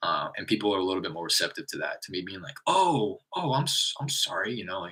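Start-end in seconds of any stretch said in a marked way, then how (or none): 2.7-4.5 very slow, high-pitched, feigned confusion. Speaker acts out how they answer people they phone, playing dumb. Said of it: "by kind of playing dumb like that".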